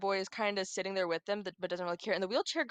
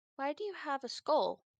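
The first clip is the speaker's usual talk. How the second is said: high, robotic text-to-speech machine voice; 7 semitones higher than usual. Storyteller voices the wheelchair girl's typed question to the group, in a robotic voice. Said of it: "The robotic voice asks".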